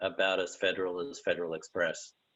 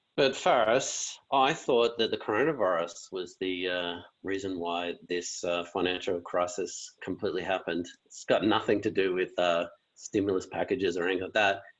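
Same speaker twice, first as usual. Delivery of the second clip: usual speaking voice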